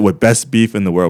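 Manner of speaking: normal talking voice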